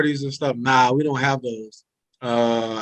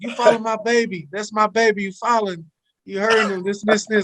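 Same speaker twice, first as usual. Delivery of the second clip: put-on yelling, pitched higher; 8 semitones higher than usual. Retelling how mom yells at the TV during games: imitating mom yelling at the TV. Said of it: "the crazy mom you think that yells at the T V".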